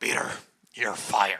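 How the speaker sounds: strained, low, loud put-on voice from the throat. Voicing someone who fires Peter, the speaker does a throat-straining impression. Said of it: "That voice is going to kill me".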